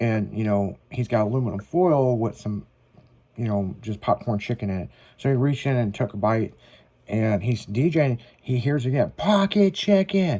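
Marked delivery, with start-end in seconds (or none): 9.2-10.4 high-pitched yelled call. Retelling how a guy in a packed crowd yelled at the DJ: imitating a guy yelling. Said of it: "this guy yells".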